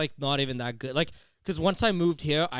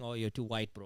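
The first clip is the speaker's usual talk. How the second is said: put-on Indian English accent; 4 semitones lower, 10 dB quieter than usual. Retelling what recent arrivals from India say: imitating an Indian accent. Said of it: "I like that accent".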